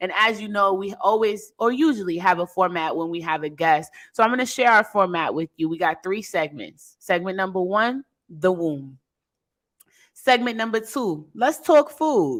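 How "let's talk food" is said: light put-on New York accent, pitched up. Listing the webisode's segments: little new york accent. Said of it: "I gotta put my little New York accent on it".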